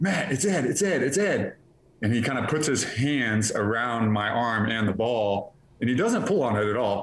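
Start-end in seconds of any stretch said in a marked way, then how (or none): 0.0-1.6 put-on yell, higher and slower. Recounting running out of bounds as someone runs up alongside, retelling someone's yell. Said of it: "he starts yelling like".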